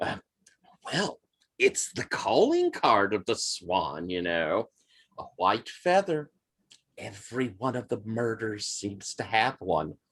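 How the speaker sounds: very low, hushed, conspiratorial voice. In a role-played scene, a woman confides in the listener: lowered conspiratorial voice. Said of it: "She kind of lowers her voice conspiratorially".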